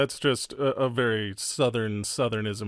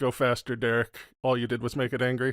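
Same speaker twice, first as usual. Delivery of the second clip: plain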